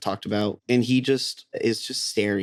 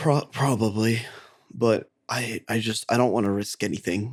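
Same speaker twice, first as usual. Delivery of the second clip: speaking on a shaky breath. A narrator voices a character asked whether a restrained captive can come, shaky breath. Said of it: "In a shaky breath".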